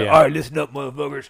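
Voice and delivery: very loud, blasting yell at full force. Describing an audiobook, the speaker does the moment the author cuts in: David Goggins impression. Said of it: "David hops in and it's such a shock to the system".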